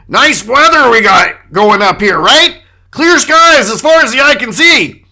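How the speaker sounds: loud chatter, talking over others, steamrolling. Retelling a man in the middle talking over two people going after each other: imitating loud talking over others. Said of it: "He's just talking loudly over them".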